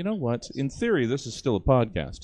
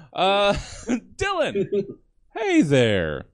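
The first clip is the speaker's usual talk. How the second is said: put-on chipper voice, much higher and slower; 9 semitones higher, 5 dB louder than usual. Host of the Stab Show greets a panelist: put-on chipper voice. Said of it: "Putting on the chipper voice".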